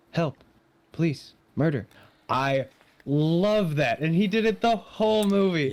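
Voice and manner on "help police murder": aggressively nonchalant, sarcastic tone. Retelling Willy Wonka's reply to a mother's plea: imitating Willy Wonka's aggressive nonchalance. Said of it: "he's just like".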